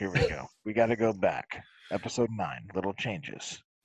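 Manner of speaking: very deep, very low, slow, unhurried delivery. Restarting the podcast segment in a put-on Howard Stern voice. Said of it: "here's my Howard Stern voice".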